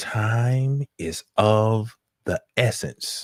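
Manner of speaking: acted eerie, weak-voiced foreboding tone. Retelling how a woman with two weeks left spoke to him; imitating her eerie tone. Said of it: "so eerie the way she was talking".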